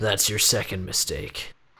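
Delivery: said quietly under breath. Recounting what they were going to say during the riddle, muttered under breath. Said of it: "quietly under my breath".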